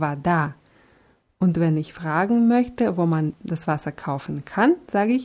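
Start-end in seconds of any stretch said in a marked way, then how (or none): 0.0-0.5 вода with stress on final syllable да. Teaching Russian word for water in German, stress on second syllable of вода. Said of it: "hier ist die Betonung bei der Grundform auf dem A".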